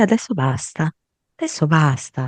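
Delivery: mock maternal, soothing, settling voice. Voicing a mother who says enough is enough: motherly tone. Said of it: "con quel tono materno".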